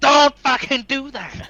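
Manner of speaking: very high, loud shouted yell. In a tabletop game, a player's character yells out at another, yelling out. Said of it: "yell out".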